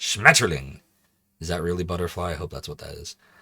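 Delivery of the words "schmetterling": loud, fake-angry bellowed shout. Saying the German word for butterfly as requested: loud mock-angry voice. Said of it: "it is funny to say in a loud, angry voice".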